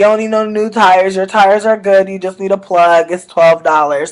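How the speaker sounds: ordinary delivery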